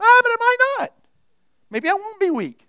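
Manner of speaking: mock wishy-washy hedging voice, high and loud. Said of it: "it kinda sounds like".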